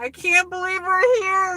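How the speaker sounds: overjoyed, high, near-tears, tearful joyful voice. Retelling a first visit to Yankee Stadium, reenacting happy tears. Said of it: "in tears".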